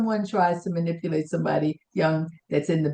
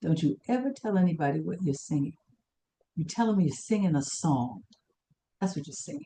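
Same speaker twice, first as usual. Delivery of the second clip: very low, hushed, rapid, confiding voice; 6 dB quieter than usual. Retelling advice someone gave after taking the speaker aside, in a very low voice. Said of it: "in a very low voice said".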